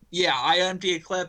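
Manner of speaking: plain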